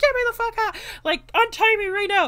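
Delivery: high, loud, panicked, freaked-out screaming.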